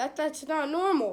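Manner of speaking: emphasis on "normal".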